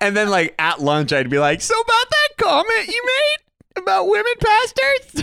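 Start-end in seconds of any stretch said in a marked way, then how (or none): 1.6-5.2 very high, uncomfortable squeal. Retelling an awkward lunch question to a colleague: imitating own uncomfortable high voice. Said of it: "Your voice just gets super, super high".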